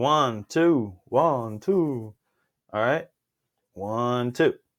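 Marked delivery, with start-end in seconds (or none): 0.0-2.1 every word drawn out slowly. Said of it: "I sounded like the Count from Sesame Street".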